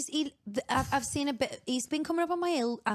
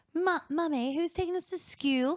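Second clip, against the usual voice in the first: put-on posh child voice, much higher; 3 semitones higher than usual. A speaker imitates one of their kids, in a posh child voice. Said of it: "our kids are so posh".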